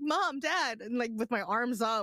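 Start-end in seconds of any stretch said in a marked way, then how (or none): 0.0-0.8 put-on scared, panicked voice, higher. Retelling being lost as a small child, calling for parents: imitating own panicked plea. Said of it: "I was freaking out".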